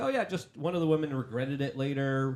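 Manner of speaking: normal talking voice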